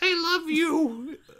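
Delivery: very high, slow creepy doll voice. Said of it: "a wizard hands you a doll and it says".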